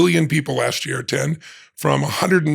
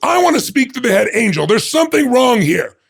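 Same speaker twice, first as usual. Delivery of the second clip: indignant, demanding, raised angry complaint; 10 semitones higher, 5 dB louder than usual. Telling a joke, the speaker acts out a man at a blackjack table in heaven, mock-angry. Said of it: "He's getting angry".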